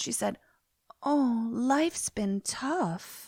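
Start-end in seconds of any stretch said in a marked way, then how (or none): 1.0-3.3 very slow, affected drawl, sympathy laid on thick. Retelling a movie scene, imitating her very affected way of talking. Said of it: "This is how she's talking".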